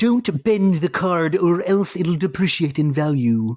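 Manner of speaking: high-pitched nerdy voice, lecturing tone. Repeating a warning about a trading card, the speaker switches to Comic Book Guy voice. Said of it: "I sound like comic book guy".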